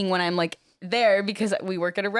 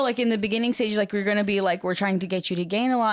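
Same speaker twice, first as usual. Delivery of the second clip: usual speaking voice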